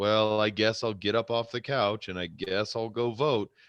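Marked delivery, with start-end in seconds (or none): none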